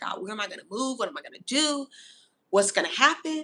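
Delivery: acted, frantic, spiralling worry, rushed and panicked. Retelling a panicked prayer about where to move: imitating own panicked self.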